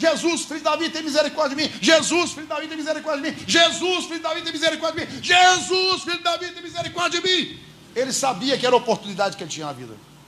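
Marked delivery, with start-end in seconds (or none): 0.0-7.6 high, relentless, nonstop pleading shouts running together. Acting out a blind man who keeps crying out while people hush him: imitating nonstop shouting, run-together pleas. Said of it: "E ele continuava gritando".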